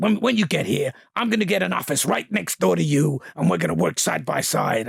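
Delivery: put-on deep voice. Retelling a first talk with Al Ruddy: deep voice imitating Al Ruddy. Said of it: "he's got this really deep voice".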